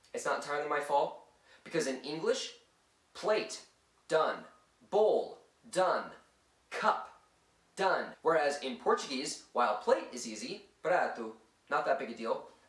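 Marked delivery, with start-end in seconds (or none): 10.8-12.4 Italian-accented pronunciation. Listing Portuguese words, the speaker says one in an Italian accent. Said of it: "I apologize for the Italian accent".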